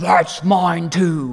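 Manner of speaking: muffled, mock speech mushed through a mouthful. Quoting a kid who grabbed the speaker's cake, imitating talking with mouth full. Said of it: "with his mouth full".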